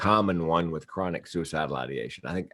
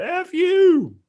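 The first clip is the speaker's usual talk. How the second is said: acted-out shrill, very high, loud, drunken-sounding scream; 6 dB louder than usual. Retelling a drunk woman turning back at the door, imitating her scream. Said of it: "she screams the F word".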